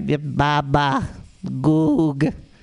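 put-on low-pitched, nonsense babbling baby talk. Joking that babies give terrible investing advice: imitating baby talk. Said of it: "listened to a baby talk".

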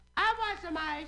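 shrill, very high-pitched woman's calling yell. Retelling a woman calling down from an upper floor: imitating a woman yelling down. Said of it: "She yells down to the guy".

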